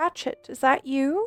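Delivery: gentle, soft-spoken, hushed voice. A game narrator voices an unseen person behind a door, in a soft voice. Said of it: "You hear a soft voice".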